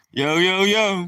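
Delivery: "yo" said with a Philadelphia accent. Speaker bonding with another Philly boy, doing a Rocky impression with Philly accent. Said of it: "like Rocky".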